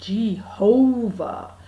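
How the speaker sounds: very slow "Jehovah" with stressed middle syllable. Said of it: "you kind of say it real slow and you emphasise the middle bit".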